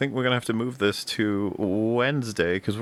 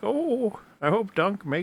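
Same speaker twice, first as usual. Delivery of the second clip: put-on very high, slow elderly woman voice; 10 semitones higher than usual. Picturing very old ladies reacting to the show, in an old lady voice. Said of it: "just being like".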